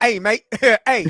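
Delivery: put-on chicken voice with a Canadian accent. Acting out what a Canadian chicken would say: voicing a Canadian chicken. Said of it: "He, he like".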